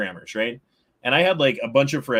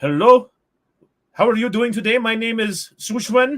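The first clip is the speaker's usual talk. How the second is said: put-on very high, loud Indian accent; 11 semitones higher, 4 dB louder than usual. Retelling a call to tech support staff: imitating indian tech support accent. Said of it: "they're like".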